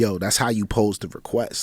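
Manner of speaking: normal talking voice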